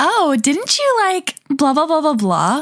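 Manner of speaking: high, sweeping, condescending tone.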